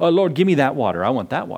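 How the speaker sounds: put-on sarcastic tone. Retelling the woman's reply to him in the story, imitating her sarcasm. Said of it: "in a sarcastic way".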